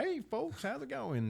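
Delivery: put-on very high, gushing, overly friendly country accent. Describing the man behind the counter greeting customers, overly friendly country accent. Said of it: "Got the overly friendly country ass accent".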